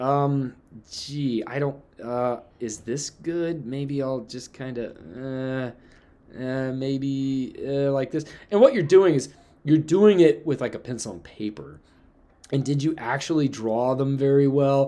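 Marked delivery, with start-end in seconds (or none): 0.0-8.2 very slow, drawn-out, halting, unsure muttering with fillers. Imitating a student trying to find a line of best fit: imitating an unsure student. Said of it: "and you're sitting there going".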